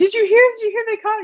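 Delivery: rushed, very high, fast near-scream of joy. Retelling a daughter's joyful news about an arrest: imitating someone screaming happily.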